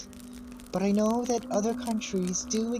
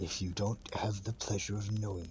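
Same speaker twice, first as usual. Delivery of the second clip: demon voice, much lower and quieter; 12 semitones lower, 8 dB quieter than usual. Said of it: "from demon voice back to normal voice".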